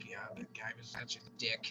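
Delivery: soft, low whispered aside.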